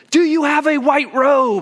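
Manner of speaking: frantic screaming, high-pitched and loud.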